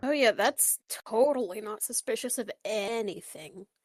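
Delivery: openly mocking, heavy, dripping sarcastic delivery. Telling who started dating whom, the speaker remarks, sarcastic. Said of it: "you can hear the sarcasm in my voice".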